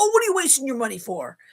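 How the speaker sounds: put-on New York Bronx accent. Retelling her dad's reply about the pansies: Dad's Bronx New York accent. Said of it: "picture a Bronx, New York accent when he does it".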